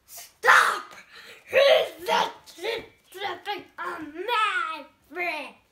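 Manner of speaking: very loud, high, bellowing troll shout. The troll jumps up to stop a billy goat crossing his bridge; shouted. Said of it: "the troll jumped up and shouted".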